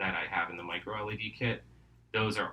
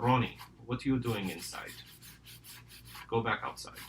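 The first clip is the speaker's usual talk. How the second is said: put-on heavy, thick Slavic grandmother accent; 3 semitones higher than usual. Acting out your grandmom finding you inside while mom is at work, in grandmom's thick Slavic accent. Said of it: "with her thick Slavic accent".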